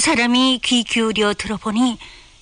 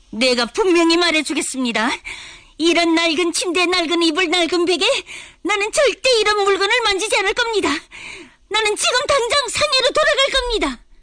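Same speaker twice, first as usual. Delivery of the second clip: very high, raised voice, climbing, getting even louder; 9 semitones higher than usual. Narrator reads a character who, asked to lower the voice, keeps speaking even louder. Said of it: "우 씨는 더욱 크게 말했다".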